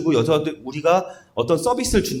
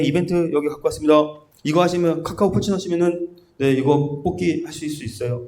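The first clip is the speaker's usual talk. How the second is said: perfunctory, rote, going-through-the-motions pitch. Acting out bringing an event offer to customers: mock-perfunctory delivery. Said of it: "그냥 그게 아니라 형식적으로 갖고 와서".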